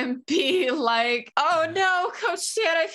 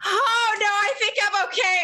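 high, pitched-up, pointed, emphatic reassuring tone; 5 semitones higher than usual. Speaking as a character who pretends to faint, said very loudly. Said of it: "I say very loudly".

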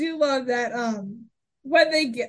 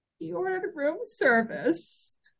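put-on pathetic voice, quieter; 5 semitones higher, 6 dB quieter than usual. Recapping a scene, the speaker quotes Marty, imitating his pathetic voice. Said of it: "says in the most pathetic voice".

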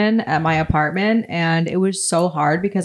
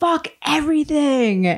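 mock, very high, sudden screamed outburst; 9 semitones higher than usual. Retelling how a man on the train followed the speaker to the door: retelling a man's scream. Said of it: "he screamed".

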